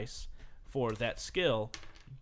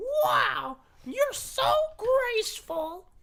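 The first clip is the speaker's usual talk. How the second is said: very high, loud, drawn-out little-creature voice; 7 dB louder than usual. Game master voicing a little toad who runs up to the player, Toad voice. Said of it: "And then a little toad runs up, / And then a little toad runs up, comes up to about your waist".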